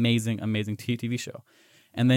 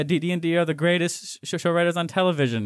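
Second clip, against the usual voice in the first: high delivery, dripping with sarcasm; 7 semitones higher than usual. Quoting Peter Dinklage praising the show writers: put-on sarcastic tone. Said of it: "he says sarcastically".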